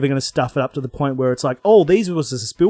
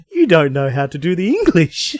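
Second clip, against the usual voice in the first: mock tearful laughter while talking; 2 semitones higher than usual. Retelling what they kept saying to a friend: imitating own crying laughter. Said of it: "I was crying laughing, going".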